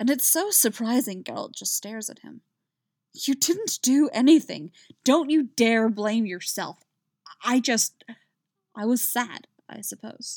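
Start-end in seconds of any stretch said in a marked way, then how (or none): 3.1-6.8 fierce, vehement, forceful, raised voice. A man fiercely cuts off his companion's apology. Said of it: "Jaskier says fiercely".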